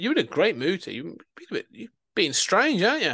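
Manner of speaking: put-on joking tease. Retelling what a woman jokingly said to Colin, retelling a joking tease. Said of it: "Like she's jokingly saying it".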